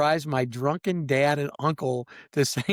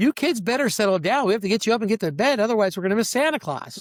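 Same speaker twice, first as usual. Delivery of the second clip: put-on, very loud, high, calling-out voice for all; 7 semitones higher, 4 dB louder than usual. Retelling how mom announced to the kids on the steps: imitating mom speaking very loudly. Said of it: "my mom very loudly goes".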